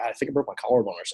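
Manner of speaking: mock wry, sarcastic throwaway delivery. Retelling a reply to the team trainer about an injury: imitating own sarcastic remark.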